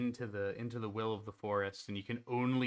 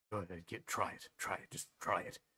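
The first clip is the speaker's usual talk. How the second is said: mock-muttering, much lower and quieter; 3 semitones lower, 6 dB quieter than usual. Describing one of the guys during the watch, retelling a muttered taunt. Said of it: "you can just hear muttering under his breath".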